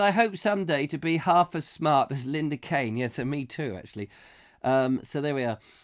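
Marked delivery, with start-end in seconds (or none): none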